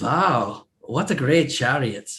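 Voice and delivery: awed, impressed exclamation in put-on Swedish accent. Telling a story, the speaker acts out what a man said, in a Swedish accent. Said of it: "I'm trying to do a Swedish accent".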